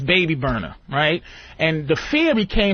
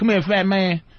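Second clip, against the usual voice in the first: put-on country accent, calling over; 3 semitones higher than usual. Retelling how inmates called out in the yard: imitating country-accented inmates. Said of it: "they were like country".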